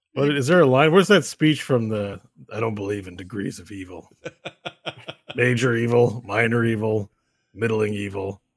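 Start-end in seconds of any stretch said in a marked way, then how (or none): 2.5-8.3 put-on bored character voice, slower. Recalling a speech from the Witcher, Witcher voice. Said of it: "just do a bored Batman and you've got a Witcher voice".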